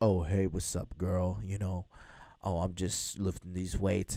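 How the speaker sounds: deliberately deepened, low put-on voice. Retelling how a buddy answered a girl's call: imitating a lowered voice. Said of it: "lower his voice".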